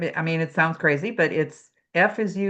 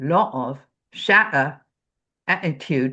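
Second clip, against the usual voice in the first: London Cockney dialect; 2 semitones lower than usual. Demonstrating how cockney speakers say a list of words, in a cockney accent. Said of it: "Cockney dialect is going to be".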